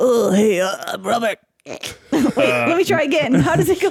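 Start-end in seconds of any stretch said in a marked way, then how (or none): 0.0-1.4 big-dude voice, much slower. A player guesses how the big dude Robert talks: Robert voice. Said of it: "Does he talk like this?".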